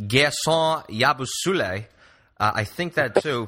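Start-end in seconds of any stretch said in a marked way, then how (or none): 0.0-1.9 showy French-accented pronunciation of a name. Grandstanding while saying a name, French accent on the name. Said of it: "maybe I'm sort of grandstanding here with a French accent".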